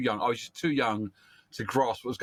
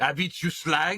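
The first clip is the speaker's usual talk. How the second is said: English with a put-on French accent; 4 semitones higher than usual. Acting out a line from the French version of the show: put-on French accent. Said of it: "But a bit more a French accent".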